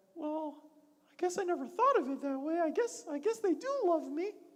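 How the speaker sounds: rattled-off, fast cartoon mouse voice. Speak as the toy Forky, now looking at himself in a different way, in a Mickey Mouse voice. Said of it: "That's my Mickey Mouse voice".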